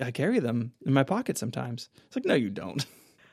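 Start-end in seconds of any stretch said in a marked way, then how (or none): 0.0-1.9 very hushed, quiet murmur. Retelling a TV scene where he offers her a mint, very quiet Michael voice. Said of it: "Very quietly".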